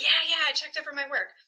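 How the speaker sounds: fast, high, rattled-off reflexive reply. Imitating how students answer about checking over their work, imitating a really fast reply. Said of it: "they say that really fast".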